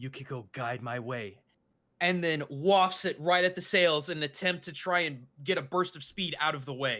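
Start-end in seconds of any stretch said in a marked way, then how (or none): 0.0-1.4 soft, hushed, breath-only half-whisper. Voicing a character invoking yukiko while using a fan: half-whisper. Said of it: "and whispers".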